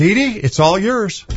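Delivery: playful, ribbing, teasing tone, a bit high. Host on ABQ Connect hands the floor to a guest, teasing. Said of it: "I'm teasing her".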